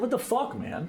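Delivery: mad outburst, voice up. Retelling walking out and speaking up, imitating own raised, mad voice. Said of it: "I sound mad. My voice is raised".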